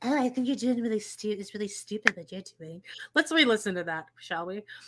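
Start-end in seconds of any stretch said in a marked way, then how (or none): 0.0-2.8 soft, mocking girly voice. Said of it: "Him doing a girl voice".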